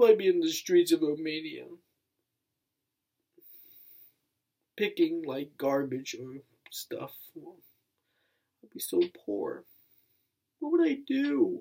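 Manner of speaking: on the verge of tears. A youtuber thanking viewers, talking about being adopted, on the verge of tears. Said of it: "I'm just gonna cry".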